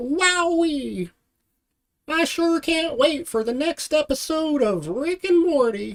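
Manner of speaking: very high cartoon voice, drawn-out "wowee". Speaker attempting an impression, Mr. Poopybutthole impression. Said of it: "mister Poopy Butthole impersonation".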